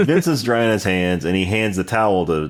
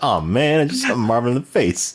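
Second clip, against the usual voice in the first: put-on nonchalant tone, higher pitch; 4 semitones higher than usual. Retelling a movie scene, quoting Vincent: nonchalant Vincent impression. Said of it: "Just so nonchalant".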